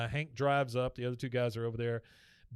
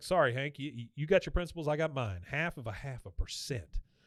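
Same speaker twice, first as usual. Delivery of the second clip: plain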